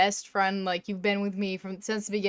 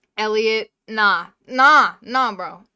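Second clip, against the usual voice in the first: booming, very loud, drawn-out upset yell; 10 dB louder than usual. Ranking marriage candidates and dismissing one, a loud upset shout. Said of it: "I just killed all of your ears".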